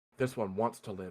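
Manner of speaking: flat, low, soft deadpan line read.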